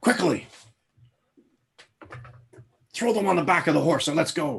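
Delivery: high, loud stage whisper. Game master voicing a character in the scene, in a stage whisper. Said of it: "the stage whispered, hushed voice".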